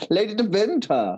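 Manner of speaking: put-on German accent with W pronounced as V. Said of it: "I confuse you with the German accent".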